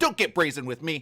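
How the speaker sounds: acted, very sharp, cutting, scolding tone. Retelling a judge's rebuke of the prosecutor: imitating Schroeder's very sharp tone. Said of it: "responded to Binger in a very sharp tone".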